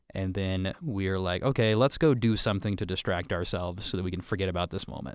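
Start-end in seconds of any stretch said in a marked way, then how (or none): none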